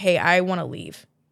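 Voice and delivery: ordinary talk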